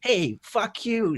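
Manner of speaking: very high, really aggressive silly voice. Explaining a private joke with a friend, in a mock-aggressive Tarantino character voice. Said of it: "just get really aggressive".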